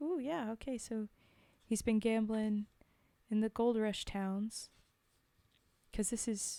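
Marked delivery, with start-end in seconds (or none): none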